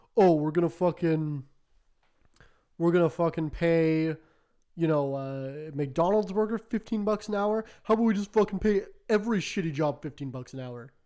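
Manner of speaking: loud, mocking, sarcastic ranting tone. Retelling a post by right-wing people making a point: imitating sarcastic right-wingers. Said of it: "And they're being sarcastic".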